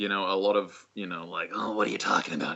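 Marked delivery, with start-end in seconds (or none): 1.5-2.5 playful villain voice. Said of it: "it was very jokery".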